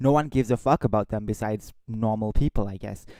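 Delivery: ordinary delivery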